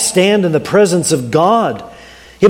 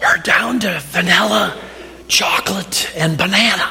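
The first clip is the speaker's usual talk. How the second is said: soft, very raspy, hoarse voice; 5 dB quieter than usual. In a joke, an ice cream shop server answers a customer, very raspy voice. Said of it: "in a very raspy voice".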